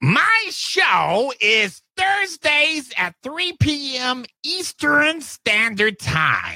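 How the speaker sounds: shrill, sharp, very high comic voice. Asked on air when your show is, answer in a Gilbert Gottfried impression. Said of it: "That's my Gilbert Godfrey".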